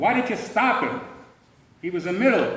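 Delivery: loud angry yell.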